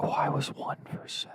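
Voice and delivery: soft, unvoiced whisper. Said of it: "Why are you whispering?".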